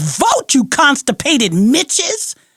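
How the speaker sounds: acted, high, swooping furious scream at full volume. Retelling screaming at the TV over Congress: imitating own screaming. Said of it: "I'm screaming at the top of my lungs".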